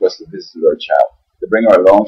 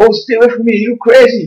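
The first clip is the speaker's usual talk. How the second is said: play-acted, very high-pitched, shrill shout. Retelling what a woman shouted in a parking lot: imitating someone shouting. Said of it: "She started to shout out".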